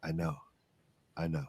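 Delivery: very soft, hushed, low murmur under the breath. Character with arms around two companions, speaking to them, said quietly. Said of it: "and I just and I quietly say".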